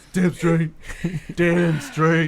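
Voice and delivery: very loud, high-pitched barking dog voice. After introducing his brother Dan as a good boy, the speaker answers in a dog voice. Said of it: "This is my dog voice".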